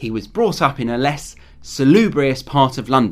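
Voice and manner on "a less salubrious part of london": normal talking voice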